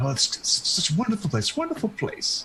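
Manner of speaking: high, rambling mutter, mumbling half to himself. Voicing a man seen walking in a room below: muttering to himself. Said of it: "you still kinda hear him kinda muttering".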